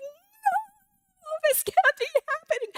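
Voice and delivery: very high, long, drawn-out, wailing scream. Recounting the call saying the money was gone: re-enacting a scream. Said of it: "I screamed".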